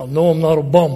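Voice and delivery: put-on low voice with slight Philadelphia accent. Quoting Rocky's answer, the speaker does Rocky's Philadelphia accent. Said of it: "with that little Philadelphia accent".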